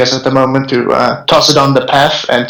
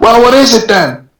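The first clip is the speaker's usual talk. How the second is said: very high, shrill screaming; 9 semitones higher than usual. Player's character loads a crossbow as rats approach, screaming. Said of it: "as he screams".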